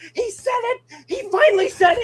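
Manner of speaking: very high, thrilled, excited outburst. Retelling grabbing his wife's shoulders during an Avengers movie: retelling an excited outburst. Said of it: "you were really excited for that".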